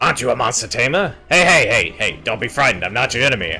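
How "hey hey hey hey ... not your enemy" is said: put-on New York Bronx accent. Voicing a game monster calming the player: Bronx accent. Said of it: "The Bronx".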